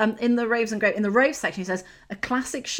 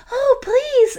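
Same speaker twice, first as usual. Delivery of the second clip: very high, loud, shrill, pleading damsel scream; 14 semitones higher, 6 dB louder than usual. Describing a woman on a game cover, voicing her mock-screaming. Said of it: "she's screaming".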